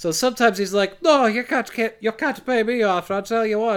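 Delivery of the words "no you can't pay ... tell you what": exaggerated Irish accent. Retelling what a character says when offered money, in a stereotypical Irish accent. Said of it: "kind of an Irish stereotype".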